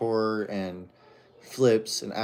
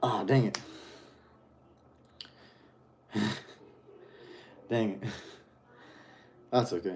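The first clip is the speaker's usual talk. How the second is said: out of breath, quieter; 5 dB quieter than usual. Fitness coach, just ran up and down the stairs: out of breath. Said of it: "I'm out of breath from running up and down the stairs".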